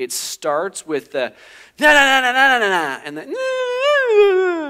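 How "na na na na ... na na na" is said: mock whiny child tone, higher and louder. Describing how a sibling quarrel starts: imitating a child whining. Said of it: "Why are you whining?".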